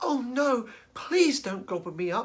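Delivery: tiny, high, small little goat voice. Reading a story aloud, the youngest Billy Goat Gruff answers the Troll in a tiny voice. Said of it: "in a tiny voice".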